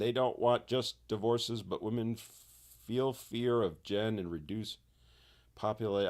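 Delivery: ordinary delivery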